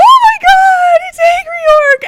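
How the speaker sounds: very high, very loud, thrilled, excited shriek. Retelling meeting someone in a hotel lobby: retelling an excited yell. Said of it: "I jumped up and I yelled".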